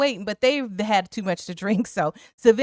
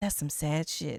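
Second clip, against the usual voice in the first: mock-muttered under breath, much quieter and lower; 6 semitones lower, 11 dB quieter than usual. Quoting what she says under her breath after that line, imitating muttering under breath. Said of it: "what she says under her breath".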